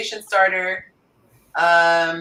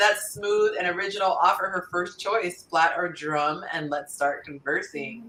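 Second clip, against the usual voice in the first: ordinary delivery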